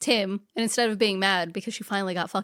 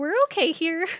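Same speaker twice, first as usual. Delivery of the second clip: put-on high, forced bright reassuring tone over tears; 9 semitones higher, 3 dB louder than usual. Retelling how a tearful woman answered, imitating a high-pitched 'everything's okay' tone. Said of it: "Her voice is high pitched in that tone".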